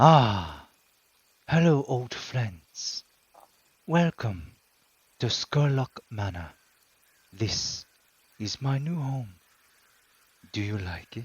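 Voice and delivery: slow, drawn-out, deliberate character voice. Voicing Amancio as he greets the group: Amancio voice. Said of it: "Amancio kinda looks out to you and says".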